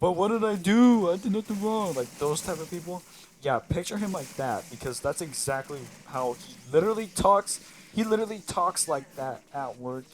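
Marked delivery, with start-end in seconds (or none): 0.0-1.9 raised, high-pitched fake-innocent protesting tone. Describing a coworker who gets in trouble, the speaker does his mock-innocent protest. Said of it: "he's the type of person to be like".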